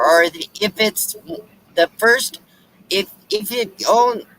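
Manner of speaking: stammering over words. Greeting new viewers of the channel, stuttering. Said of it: "I'm stuttering".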